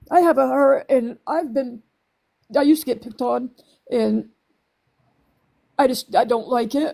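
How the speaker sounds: crying while talking. Talking with another speaker about people being degraded on the app, crying while talking. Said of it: "I'm sorry, I'm crying".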